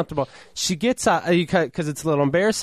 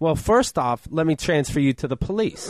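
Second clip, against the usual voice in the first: usual speaking voice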